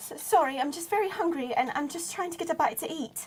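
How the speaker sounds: meek, hesitant, small, timid little voice. Voicing a character who speaks to another character in a roleplayed scene: small timid voice. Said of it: "you hear a little voice say".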